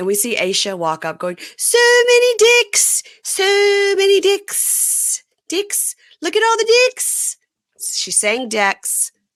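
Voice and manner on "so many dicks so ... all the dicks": put-on very high, drawn-out crazy voice with accent. Retelling a cast member walking up on the show: imitating Aisha's crazy voice and accent. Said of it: "her crazy voice and accent".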